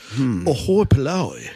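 put-on English accent. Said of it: "Can you even say that with an English accent?".

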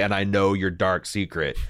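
normal talking voice

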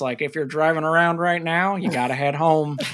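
vintage 1930s radio broadcast announcer delivery. Describing a radio broadcast that comes on while driving in the rain, in old 1930s voice. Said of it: "in like the old nineteen thirties voice".

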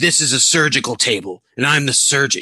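put-on gravelly superhero voice. Retelling what someone said, doing it in the Batman voice. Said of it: "I'm doing it in that voice".

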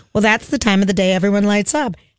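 plain

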